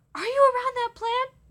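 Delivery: frantic, shrill, very high and loud panicked scream. Retelling a story where mom panics on the phone: imitating someone screaming. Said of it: "She was screaming".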